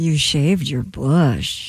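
flirty, flirtatious, coquettish tone. In an acting game, delivering the set phrase with an assigned emotion, flirty. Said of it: "Very flirty".

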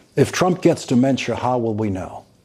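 ordinary talk

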